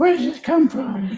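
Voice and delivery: silly, very high fish voice. Asked by the others to do the fish voice again: fish voice. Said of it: "The fish voice".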